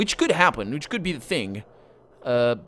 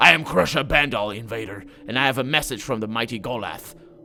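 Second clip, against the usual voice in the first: snarling brute titan voice. Narrating a game, a titan guard addresses the invader across the barrier, snarling. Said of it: "He snarls".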